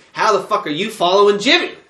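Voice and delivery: put-on furious yelling. Retelling a four-player game, yelling at a lost teammate: retelling screaming at a teammate. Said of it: "I'm screaming at the other Jimmy".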